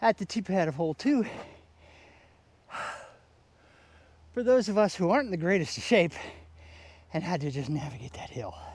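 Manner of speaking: out of breath, catching breath. At the second hole's tee after walking up a hill, out of breath. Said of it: "I gotta catch my breath".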